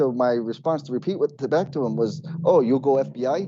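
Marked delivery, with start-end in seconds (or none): 2.4-3.5 put-on mimicked broken-English man's accent, much slower. Repeating a man's words back to him, mimicking his broken-english accent. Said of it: "I said it in his accent".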